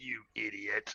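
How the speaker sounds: very quiet, low, muttered under-the-breath half-whisper. Running over a prone enemy mid-fight, the character half-whispers under their breath. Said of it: "I whisper under my breath".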